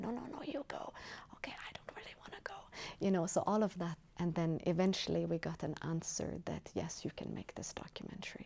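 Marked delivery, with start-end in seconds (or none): 0.0-2.5 high, soft whisper. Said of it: "this kind of whispers like".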